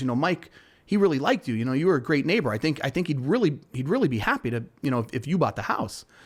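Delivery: normal talking voice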